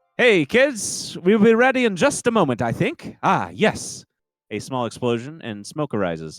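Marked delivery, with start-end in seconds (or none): 0.2-4.1 very high, loud shout. Voicing a character in the kitchen calling to the kids: shouting from the kitchen. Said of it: "He shouts".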